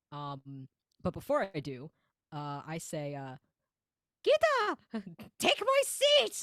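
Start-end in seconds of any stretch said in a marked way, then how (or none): 4.2-6.4 squeaky cartoon voice, much higher. A player's character speaks just before teleporting down to the ground: Mickey Mouse voice. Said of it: "my brain keeps going into Mickey Mouse zone".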